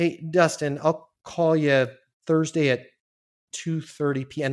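slow, hesitant, groping for each word. Demonstrating to viewers how to offer a call time, sounding like searching for words. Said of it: "Listen to how I sound like I'm trying to find the words".

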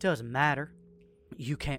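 through gritted teeth. Bleeding woman held at gunpoint answers you, speaking through gritted teeth. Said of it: "she grits her teeth".

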